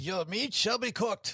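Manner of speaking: played-up German accent. Joking about German diners at the next table: German accent. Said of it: "I'm just thinking of the German accent".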